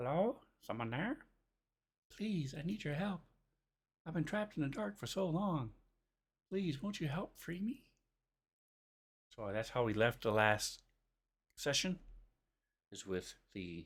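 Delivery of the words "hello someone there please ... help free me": very high, soft, gentle feminine voice. A game narrator voices a voice calling out in the players' minds: soft feminine voice. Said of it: "a soft feminine voice sounds out in your mind".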